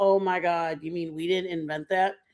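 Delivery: ordinary delivery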